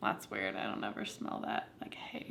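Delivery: low, soft, quiet whisper to oneself. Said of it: "and I'm always like".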